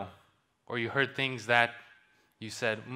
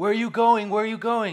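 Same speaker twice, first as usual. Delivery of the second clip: very high, very loud, shrill shouting; 10 semitones higher, 8 dB louder than usual. Speaker retells a story where a man yells at a horse rider: retelling a yell. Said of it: "the guy yells yells at him".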